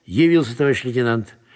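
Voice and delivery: plain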